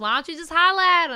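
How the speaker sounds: put-on character voice, up and loud. Urging a friend to just talk to him, switching to Riley voice. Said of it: "In my Riley voice".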